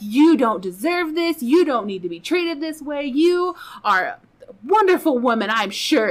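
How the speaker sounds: imitated angry yelling. Retelling a stranger scolding the husband: imitating someone yelling angrily. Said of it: "she's just pissed, yelling at Ty".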